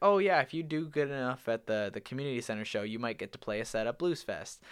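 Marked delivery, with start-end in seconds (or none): none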